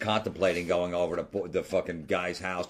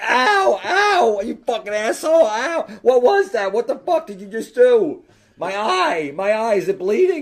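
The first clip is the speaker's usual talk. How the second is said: drawn-out, very loud, high shrieks of pain; 13 dB louder than usual. Retelling a friend being hit in the eye by a box: imitating someone screaming in pain. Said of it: "she's fucking screaming".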